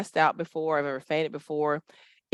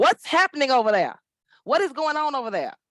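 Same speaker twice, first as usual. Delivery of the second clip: mock high, booming, bellowing yell; 8 semitones higher than usual. Retelling a school story, quoting the principal on a megaphone: imitating Miss Booyah yelling. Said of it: "she is yelling".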